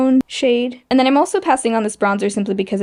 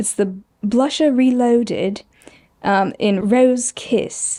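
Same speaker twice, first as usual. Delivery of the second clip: terrible put-on British accent; 2 semitones higher than usual. Reading out a blush's product name in a terrible British accent. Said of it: "I have a terrible British accent".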